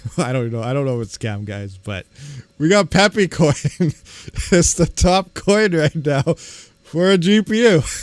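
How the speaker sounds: laughing while talking. Reading out the top coin for GPU mining, laughing while talking. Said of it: "I can't stop".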